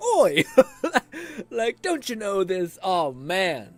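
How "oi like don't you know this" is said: put-on loud, high-pitched fantasy dwarf accent, called out. Mocking how the cute mouse character talks: imitating the mouse character's fantasy accent. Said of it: "mouse character to be like".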